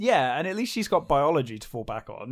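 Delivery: ordinary delivery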